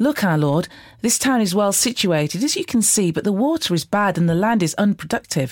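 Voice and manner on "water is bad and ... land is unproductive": ordinary delivery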